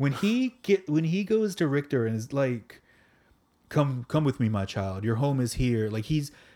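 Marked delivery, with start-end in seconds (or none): 3.7-5.9 acted imposing fatherly voice. Quoting a character calling another to come home: Apocalypse as imposing father figure. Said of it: "this big, imposing father figure".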